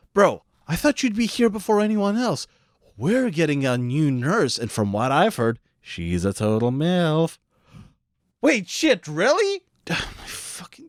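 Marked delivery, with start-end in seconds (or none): 9.9-10.9 muttered under her breath, much quieter. In a scene about a new nurse, she speaks under her breath. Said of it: "[under her breath]".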